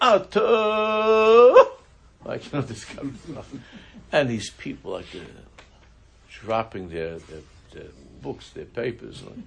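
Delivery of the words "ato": high, loud holler at full volume. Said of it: "hollers out".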